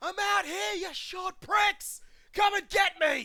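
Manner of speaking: top-of-the-lungs yell, very loud and high. A character steps out of the bar with two others, shouting at top of lungs. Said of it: "clear his throat and the top of his lungs".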